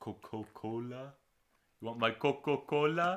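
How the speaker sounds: slow, drawn-out, high-pitched cartoon voice.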